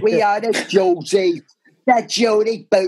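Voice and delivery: put-on strong London Cockney accent. Retelling what a woman kept saying: Cockney accent. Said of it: "had such a Cockney accent".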